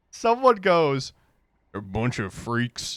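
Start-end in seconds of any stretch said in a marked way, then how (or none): 1.7-3.0 put-on muttering under breath, lower and quieter. Retelling what someone said on the way out: imitating a mumble under the breath. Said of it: "kinda half mumbled under their breath".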